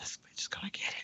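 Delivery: very quiet whisper under the breath. Showing how a woman did not say her remark, whispered. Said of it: "she whispered like".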